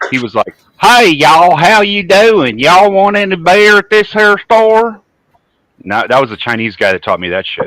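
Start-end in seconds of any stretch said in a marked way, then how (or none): 0.8-5.0 high, loud, heavy hillbilly twang, drawn out. Quoting the man he learned the accent from, imitating a hillbilly accent. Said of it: "I learned this accent from a Chinese guy".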